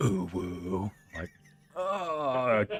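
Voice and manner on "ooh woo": eerie demon moan. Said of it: "in the demon voice".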